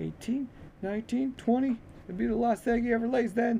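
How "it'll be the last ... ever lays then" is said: very high, coarse, laughed-through delivery. A man answers the boy's question about the chickens, with a coarse laugh. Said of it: "said the man with a coarse laugh".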